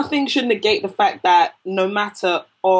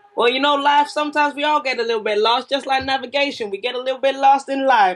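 very bad put-on Southern accent, pitched up; 6 semitones higher than usual. Retelling something overheard in Nashville, in a bad Southern accent. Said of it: "That is the worst Southern accent".

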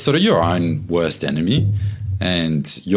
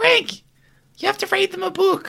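very high, squeaky mum voice. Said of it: "that squeaky voice that you just did".

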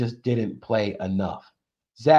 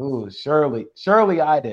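dry, slow, sarcastic mock surprise; 2 semitones higher than usual. Talking about bad play calling with the others: sarcastic.

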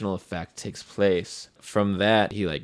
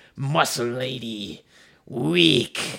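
high, snarled, jeering monster voice; 5 semitones higher than usual. A game master voices a foe just struck by an axe, taunting the player, snarling. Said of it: "he snarls at you".

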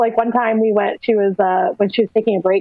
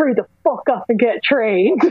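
mock-furious acted anger, higher pitch; 3 semitones higher than usual. Retelling what a woman told the speaker after a disappointing match: imitating her super mad. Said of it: "she came back like super mad".

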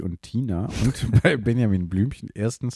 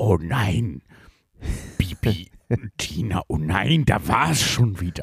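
put-on elderly man's narrator voice, talking round his dentures. Imitating the storyteller of Bibi und Tina, old man with dentures voice. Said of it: "also Cookie Dent hört man beim Erzählen".

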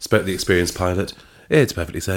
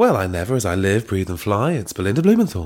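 airline pilot voice, as over a cabin intercom. Voicing a character in the group's story, like a pilot's announcement. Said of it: "like a pilot's voice".

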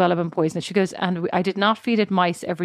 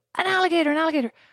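mock shrill, very high, yelled-out shout; 10 semitones higher than usual. Retelling how a companion shouted on spotting an alligator: imitating someone shouting. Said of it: "starts shouting".

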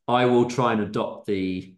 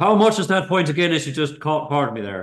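Irish accent, raised pitch; 6 semitones higher, 3 dB louder than usual. Asked by the others to hear their irish, the speaker gives an irish accent. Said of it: "Can we hear your Irish?".

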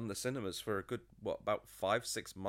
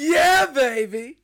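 bad, shrill, loud, high belting; 18 dB louder than usual. Told the film came out 25 years ago this week, burst into a bad Austin Powers impression. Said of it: "That was the worst Austin Powers impression I've ever heard".

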